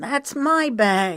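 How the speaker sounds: sharp, raspy snap. During a ruckus near the food stand, a woman claims a bag, in a raspy snapping voice. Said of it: "a woman snapped in a raspy voice".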